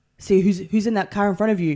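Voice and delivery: pointed, testing, intimidating tone. Retelling a lesson with a manual driving instructor, imitating the driving instructor. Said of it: "I was terrified".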